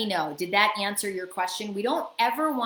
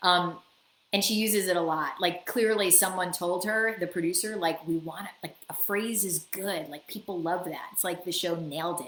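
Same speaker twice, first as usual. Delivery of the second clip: usual speaking voice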